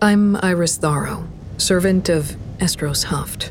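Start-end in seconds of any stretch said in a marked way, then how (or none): none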